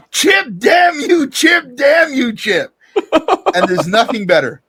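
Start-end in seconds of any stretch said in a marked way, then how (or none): 0.2-2.8 very high, drawn-out scream. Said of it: "And I'm literally screaming".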